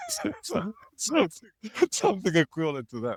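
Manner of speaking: high-pitched giggling words. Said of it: "sorry, I'm sorry for laughing".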